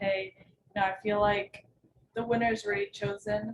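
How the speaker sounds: normal talking voice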